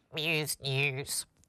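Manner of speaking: harpsichord-like pinched-nose nasal twang. Asked by the co-host to say the segment name holding nose, harpsichord nasal twang. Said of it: "harpsichord nasal twang".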